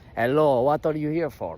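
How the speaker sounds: bad, butchered German accent, super villain voice. Retelling walking into a man's office, quoting him in a bad german accent. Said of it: "I'm gonna butcher this accent".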